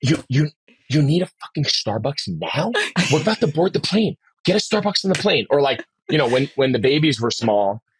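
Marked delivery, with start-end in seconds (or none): 0.0-5.5 angry, hushed stage whisper. Explaining what half-whisper fighting is by acting one out, angry half-whisper. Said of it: "so like whisper fighting is like".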